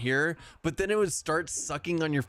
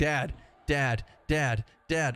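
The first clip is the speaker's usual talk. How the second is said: put-on meowing cat voice, much slower. Owner retells how his cat wakes him up, imitating a meowing cat. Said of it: "just starts meowing".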